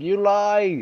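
high-pitched scream. Recounting people who doubt the speaker's accent screaming, retelling a scream. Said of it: "they always end up screaming at me".

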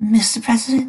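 very high, trembling, shaky voice. A pony mare salutes and addresses the president, with a shaky voice. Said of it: "she said with a shaky voice".

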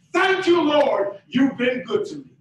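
loud grateful cry.

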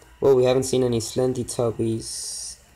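ordinary talk, nothing marked

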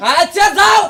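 angry, sulking shout, loud and high.

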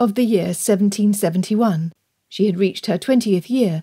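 ordinary delivery

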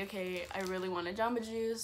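ordinary talk, nothing marked

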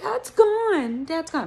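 high, whining dog voice like a sulking pet. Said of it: "he was whining".

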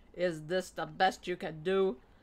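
loud, roaring bellow. Narrating, the captain confronts the two men who brought her; bellowed. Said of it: "he bellowed".

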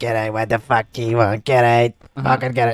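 put-on heavy chain-smoker voice. Retelling how a woman threw kids out of the shop: imitating a heavy smoker's voice. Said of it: "she's actually talking like that 'cause she used to smoke".

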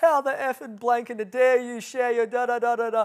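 piercing, shrill, all-out, full-volume shrieking. Telling a story about sharing about Jesus, retelling a woman screaming at him. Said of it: "this woman fully starts manifesting and like screaming like".

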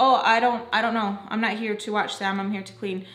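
ordinary delivery

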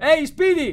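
very high, loud calling shout. Narrator reads Donovan calling out to the robot Speedy, shouted. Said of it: "gridò Donovan".

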